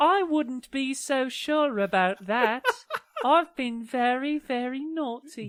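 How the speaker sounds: high-pitched storybook wicked queen voice. Retelling a scene, she answers Matt in a Red Queen voice. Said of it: "you really get the Red Queen voice down".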